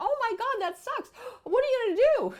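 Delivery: very high, very loud, panicky hysterical outburst. Showing the wrong way to respond to an upset person: hysterical reaction. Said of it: "You don't want to get in the hysteria".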